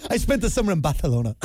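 mock pretentious, fast, posh lisp on "Barcelona".

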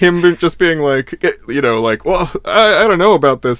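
high, loud, scared squeak.

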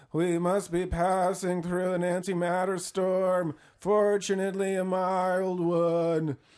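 trembling, shivering voice. Retelling a scene where Pickens shivers over a display screen, in Pickens's shaky voice. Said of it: "he says in a shaky voice".

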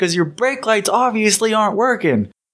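high, furious yelling. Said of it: "He's yelling".

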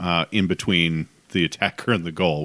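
normal talking voice

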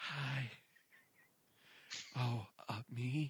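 fake out-of-breath whisper. Mocking the women in phone-line commercials, the speaker answers a call: mock-breathless hushed phone voice. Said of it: "always sounds like they just ran a bit and they have to be quiet".

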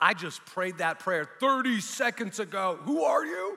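high, loud, freaked-out disbelief. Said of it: "it kind of freaked me out".

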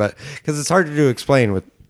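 talking through the giggles. Explaining a time travel movie plot, laughing while talking. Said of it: "sorry, I'm laughing".

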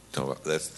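emotional, voice catching. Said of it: "Sorry, I'm a little emotional".

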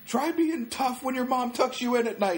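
put-on very high, drunken jeering voice with laughter. Retelling being pulled out by staff while drunk, retelling a drunken laughing taunt. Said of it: "shit-faced drunk laughing the whole time".

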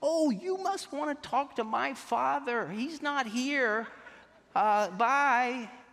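phony high voice, very slow, long drawn-out "bye". Retelling how Dad answered a caller on the phone: dad's put-on high voice. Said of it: "he started talking in a real high voice".

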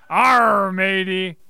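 talking like a pirate. A show host, after inviting listeners to talk like a pirate, doing a pirate voice. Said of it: "if you feel the desire to talk like a pirate today".

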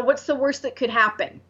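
ordinary talk

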